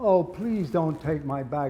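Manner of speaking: fake English accent, slowed. Tied up, pleading with the men loading things, in a put-on english accent. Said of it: "I used my best English accent".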